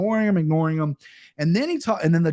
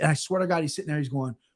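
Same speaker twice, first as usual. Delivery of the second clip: ordinary talk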